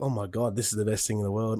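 ordinary delivery

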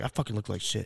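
ordinary talk

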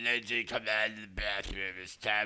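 wild, a bit crazed, croaking drawl. Imitating a director coaxing an actress out of the bathroom: croaky voice. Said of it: "in that crazy, like, croaky voice".

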